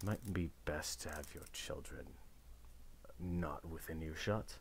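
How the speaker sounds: very quiet, hushed, close whisper. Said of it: "starts whispering to, into your ears".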